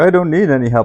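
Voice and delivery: snarky, dismissive sarcastic tone. Retelling how book characters snub an offer of help: imitating a sarcastic retort. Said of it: "snarky, sarcastically like".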